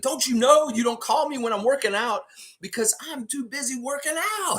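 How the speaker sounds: very high, fired-up yelling rant, acted out. Retelling a clip of Siakam working out and answering his phone: imitating Siakam yelling. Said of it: "yelling in the camera".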